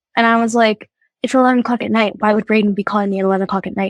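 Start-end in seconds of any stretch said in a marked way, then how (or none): none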